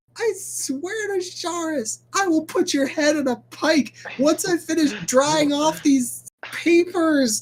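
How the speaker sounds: enraged screaming. Voicing an academic whose office got covered in snow: enraged screaming. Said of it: "Banira screams, not out of fear, out of pure academic rage".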